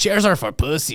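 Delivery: put-on Mexican accent. Quoting a favorite episode to a friendly listener, in a Mexican accent from Key and Peele. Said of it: "say that in a Mexican accent because Key and Peele episode where he's like".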